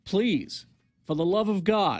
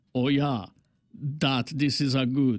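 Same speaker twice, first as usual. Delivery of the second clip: accent from Yugoslavia; 5 semitones lower than usual. Mocking the men in videos, trying out a thick Yugoslavian accent. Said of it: "use thick Yugoslavian accent here. I'll try".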